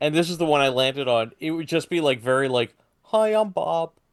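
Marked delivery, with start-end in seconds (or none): 3.0-3.9 sweet, soft, gentle monster voice, pitched up. Imagining how the monster would sound if it talked: very gentle monster voice. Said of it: "very gentle and misunderstood".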